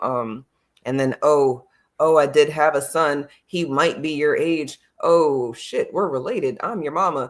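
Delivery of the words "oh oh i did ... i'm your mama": ordinary talk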